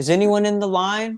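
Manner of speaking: mock high-pitched loud voice. Telling of getting in line at a store, the speaker repeats the question: retelling a loud call. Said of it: "And I say in a loud voice".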